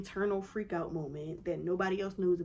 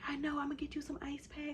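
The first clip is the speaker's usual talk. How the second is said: hushed, soft, high whisper; 7 semitones higher, 6 dB quieter than usual. Retelling what the nurse said through the door, retelling a whisper. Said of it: "have this whisper conversation through the door".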